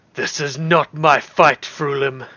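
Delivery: huge, thunderous, booming dragon monster voice. Narrator voicing a dragon just struck under its wing: booming dragon voice. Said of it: "its booming voice in common".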